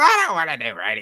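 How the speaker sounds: loud, cranky curmudgeon voice. Retelling his answer when you asked him onto a radio show, do a Mr. Rooney impression. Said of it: "And that's how he talked".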